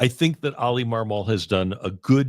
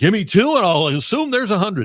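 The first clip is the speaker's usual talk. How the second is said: shrill and loud delivery; 10 semitones higher, 5 dB louder than usual. Quoting an old Slats line to a co-host: Slats impression. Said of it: "sounded like Bob Ramsey doing his Slats impression".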